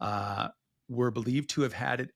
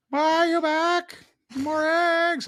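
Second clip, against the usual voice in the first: very high, loud, put-on chicken voice; 8 dB louder than usual. Speaker acting out a short bit in conversation, chicken voice impersonation. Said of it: "me doing a chicken voice impersonation".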